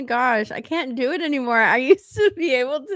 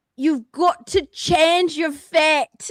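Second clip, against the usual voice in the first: halting, unconvincing put-on Scottish accent; 4 semitones higher than usual. Quoting a line from Brave while saying they can't do it, failed Scottish accent. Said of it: "can't do it. I wish I could".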